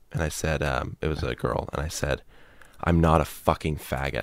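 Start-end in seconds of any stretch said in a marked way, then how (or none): 2.8-4.2 put-on tearful, aggressive voice, lower and quieter. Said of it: "with tears in my eyes, starting to cry".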